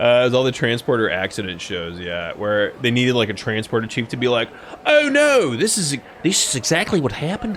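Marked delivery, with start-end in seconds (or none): 4.8-7.6 put-on Australian accent, pitched way up. Imitating a transporter chief explaining a transporter accident, Australian accent. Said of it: "that's an Australian accent".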